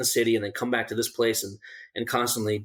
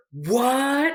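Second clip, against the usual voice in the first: very high, really loud, drawn-out shrill holler; 4 dB louder than usual. Recounting a man in the woods who was told to be quiet, retelling a really loud shout. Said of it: "Like really loud".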